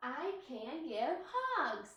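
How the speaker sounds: upbeat, excited read, rising in pitch on "hugs". Reading a sentence aloud to boys and girls, rising at the end, excited. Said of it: "My voice went up at the end".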